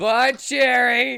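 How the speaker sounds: very high, very loud, shrill scream. Leaving the place in character: screaming a goodbye. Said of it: "I'm gonna scream".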